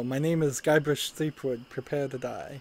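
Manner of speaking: ordinary talk, nothing marked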